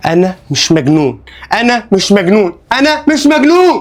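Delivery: worked-up, upset, agitated insistence with rising voice. Repeating that he is not crazy to the doctor: agitated, worked up. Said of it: "اهدى كده شوية".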